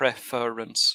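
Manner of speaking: preference in three syllables, first syllable pre stressed. Correcting someone's stress on the word, stress on pre in preference. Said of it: "that word is three syllables, preference, and you stress the first".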